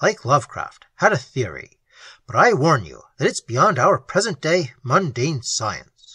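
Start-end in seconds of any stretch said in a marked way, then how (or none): none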